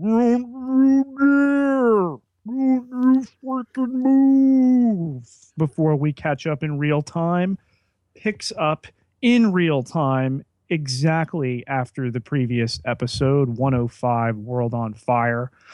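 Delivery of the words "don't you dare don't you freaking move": very high, warped, slow-motion distorted police voice. Episode recap voicing a cop's line in a distorted slow-motion cop voice. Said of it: "Distorted cop voice in slow motion".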